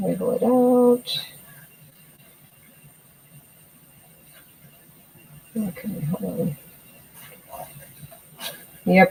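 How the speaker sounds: hushed whisper. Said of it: "I'm whispering, I'm sorry".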